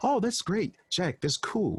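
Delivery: put-on refined, polite chatter. Describing diners at a diamond-rated restaurant, imitating monotonous talk. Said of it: "very monotonous sometimes talking".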